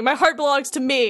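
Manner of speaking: small, contained, held-back mild yell. Recapping a scene where Roxas attacks Diz, imitating Roxas screaming. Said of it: "Roxas just kind of screams".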